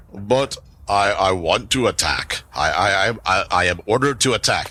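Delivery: loud resonant boom. A storyteller voices a character ordered to attack visitors, in Snopsnuck's big booming voice. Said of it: "a big booming voice".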